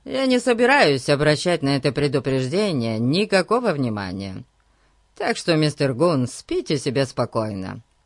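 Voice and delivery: plain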